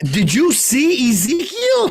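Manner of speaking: mock, chatty put-on voice, high and drawn out.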